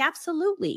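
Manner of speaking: mock professional tone. Retelling a phone call, imitating own professional tone. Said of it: "in the moment of me acting professional".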